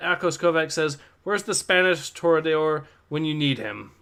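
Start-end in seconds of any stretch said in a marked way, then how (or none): none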